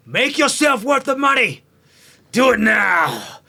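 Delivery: very loud swooping shout. A warrior rolls to the front and yells at the gnome artificer, yelling orders. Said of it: "just yells at the artificer".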